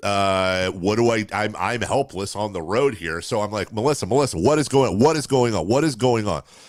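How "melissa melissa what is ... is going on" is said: put-on frantic panicked voice, faster. Retelling calling out to Melissa while fearing an intruder, imitating panicked calling. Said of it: "I'm freaking out all of a sudden".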